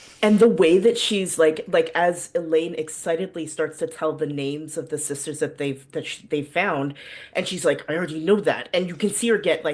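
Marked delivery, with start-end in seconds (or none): 7.9-8.7 put-on frustrated tone. Retelling a character's reply to someone listing names: imitating a frustrated character.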